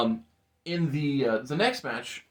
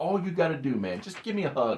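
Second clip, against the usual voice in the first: mock, begging plea. Retelling a wrestler at ringside begging another for a hug: retelling someone begging. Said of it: "and he's begging Chris".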